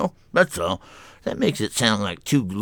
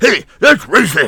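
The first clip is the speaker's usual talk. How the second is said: booming, very loud, very high furious yell; 11 semitones higher, 10 dB louder than usual. Acting out someone who picks on people, mock yelling mad. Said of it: "when I'm yelling mad".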